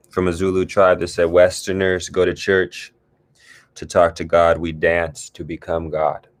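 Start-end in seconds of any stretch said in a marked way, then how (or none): none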